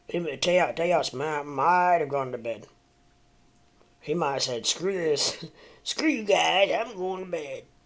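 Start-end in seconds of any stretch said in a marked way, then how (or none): 4.7-7.7 put-on high, bratty cartoon kid voice. The speaker imagines what Teos might have said going to bed, Cartman impression. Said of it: "my best uh, Cartman impersonation".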